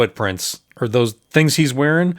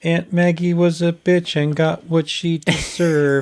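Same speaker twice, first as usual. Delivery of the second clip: shy, timid, meek little voice; 3 semitones higher than usual. Imitating the way Andy says the line: timid Andy voice. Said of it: "so timid about it".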